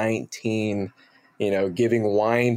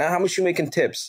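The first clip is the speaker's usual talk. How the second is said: put-on New Jersey accent, pitched higher; 8 semitones higher than usual. Retelling what a bar manager said when asked for accent help: imitating Dave Latour's Jersey accent. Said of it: "Jersey, East Coast, Jersey guy from Hoboken".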